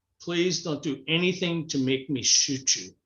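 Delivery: mock serious, threatening tone. Retelling a truck driver's warning, imitating a serious warning.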